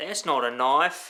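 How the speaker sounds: put-on slow, drawled Australian accent. About to use a knife, speaker quotes Crocodile Dundee: Crocodile Dundee Australian accent. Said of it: "How's my Australian accent?".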